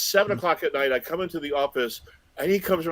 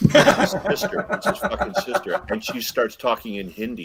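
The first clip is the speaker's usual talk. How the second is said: ordinary talk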